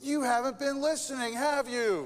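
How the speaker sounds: loud, high-pitched, exasperated scolding tone.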